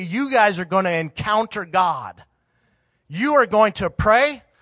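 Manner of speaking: put-on harsh, stern, severe commanding voice. Father demonstrates taking his three kids to the prayer room, harsh voice. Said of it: "with a harsh demeanor and voice".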